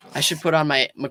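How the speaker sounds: ordinary delivery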